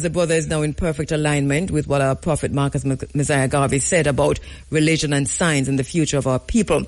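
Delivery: normal talking voice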